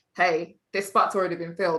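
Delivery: ordinary talk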